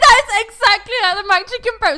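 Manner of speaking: shouting into the mic. Comparing chicken burgers with another speaker: shouting into the mic. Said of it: "I'm shouting into the mic".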